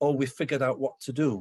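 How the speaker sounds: plain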